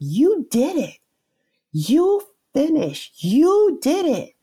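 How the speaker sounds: mock top-of-the-lungs scream, very high, swooping, drawn-out. Retelling how a friend screamed at the finish: imitating someone screaming. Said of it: "she screams out top of her lungs".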